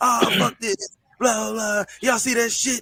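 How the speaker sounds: high-pitched, loud, shouted rant.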